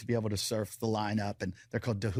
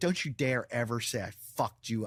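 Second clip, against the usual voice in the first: acted, furious, mock-angry tone. Recounting a confrontation, repeating what the speaker told him: retelling an angry threat. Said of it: "I was so mad".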